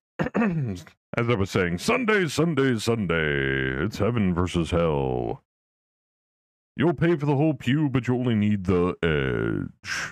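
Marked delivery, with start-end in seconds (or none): 1.8-10.1 radio-ad announcer delivery with drawn-out edge. Doing a Sunday bit, then naming the style, in announcer voice. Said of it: "see, that's my announcer voice".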